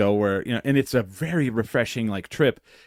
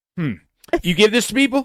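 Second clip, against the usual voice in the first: play-acted shrill, very high, loud, sudden angry outburst; 10 semitones higher, 5 dB louder than usual. Retelling how Henry reacted after a swig: imitating Henry being mad. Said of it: "Right away, he's, like, mad".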